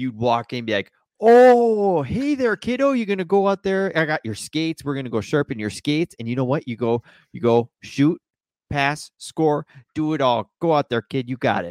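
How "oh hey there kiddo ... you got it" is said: put-on loud, full-blown Northern Minnesota accent. Remembering the man who ran a little shop at the rink, greeting a kid: Northern Minnesota accent impression. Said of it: "full blown Northern Minnesotan".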